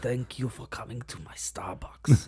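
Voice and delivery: put-on deep, flat German accent. Doing another Herzog line in a low voice: low Werner Herzog voice. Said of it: "It's like this low".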